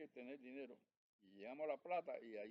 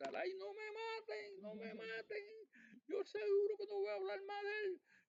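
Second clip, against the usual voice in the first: mock very high, loud, drawn-out, pleading panicked scream; 5 dB louder than usual. Retelling a churro seller's cry when taken up in a helicopter: imitating a panicked shout. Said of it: "empezó a gritar".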